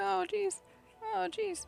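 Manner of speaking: flustered, panicked tone. Racing a fourteen-second timer while drawing a pose: panicking. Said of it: "I'm panicking".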